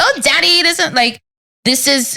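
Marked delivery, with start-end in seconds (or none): 0.0-0.9 high-pitched, ditzy airhead voice. Describing how Hillary used to be played: ditzy Hillary voice. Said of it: "she was ditzy".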